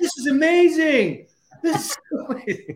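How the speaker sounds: very loud, shrill, high, booming, drawn-out yell. Retelling a coworker in headphones who couldn't hear himself: imitating someone yelling. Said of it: "yelling 'cause he can't hear himself".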